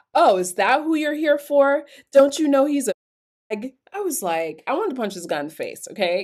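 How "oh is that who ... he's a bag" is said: affronted, put-out, indignant tone. Retelling a man's reply at a dance about who she came for, mock-indignant reply. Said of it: "he replied indignantly".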